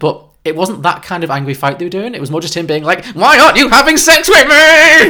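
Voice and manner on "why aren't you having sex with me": put-on very high, very loud childish tantrum wail. Retelling his complaint in the film: imitating a child throwing a tantrum. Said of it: "child throwing a tantrum".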